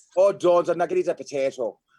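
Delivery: put-on, fake Irish accent. Answering a request to do an irish accent: put-on irish accent. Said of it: "Give me your Irish accent".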